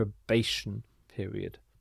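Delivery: softly stressed middle syllable of probation. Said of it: "the stress is here".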